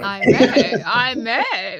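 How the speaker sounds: put-on British accent. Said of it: "we're turning British now".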